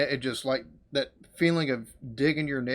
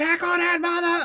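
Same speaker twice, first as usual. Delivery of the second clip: acted-out, very high screaming; 5 dB louder than usual. Retelling reacting to missed tackles during a game, imitating screaming at the TV. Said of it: "I'm screaming at the T V".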